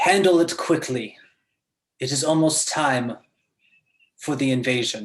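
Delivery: loud, commanding radio-style voice. Narrating a scene, voicing a new voice over the radio, commanding. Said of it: "a new voice ... that just has this command to it".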